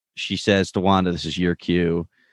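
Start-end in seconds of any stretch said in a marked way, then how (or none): none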